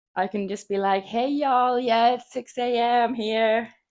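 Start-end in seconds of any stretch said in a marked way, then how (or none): 1.0-3.6 put-on drawled American accent, slow and high. Pretending to be up really early in the USA, in a put-on American accent. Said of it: "if I do an American accent".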